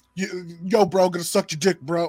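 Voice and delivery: mock-aggressive New York young woman voice. Explaining why New York girls sound less hot, imitating an aggressive New York girl. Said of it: "New York chicks are very. Aggressive".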